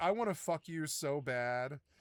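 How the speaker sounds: whispered voice. Quoting what she would say to the speaker at two forty-five in the morning: retelling a whisper. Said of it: "She would whisper it to me".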